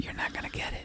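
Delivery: low, soft, ironic whisper. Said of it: "why are you screaming at him".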